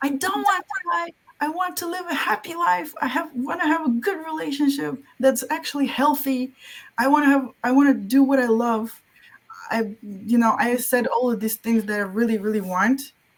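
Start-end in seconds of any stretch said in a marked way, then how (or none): 0.0-9.0 put-on scream, much higher pitch. Recounting a moment of screaming from the heart, retelling a scream.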